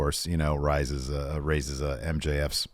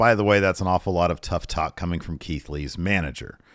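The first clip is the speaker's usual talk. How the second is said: ordinary talk, nothing marked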